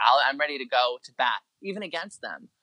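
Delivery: ordinary delivery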